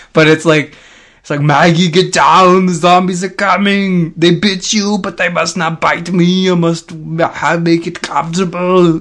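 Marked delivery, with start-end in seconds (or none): 1.3-9.0 loud, put-on Austrian accent. Acting out a farmer warning Maggie about zombies: Arnold Schwarzenegger impression.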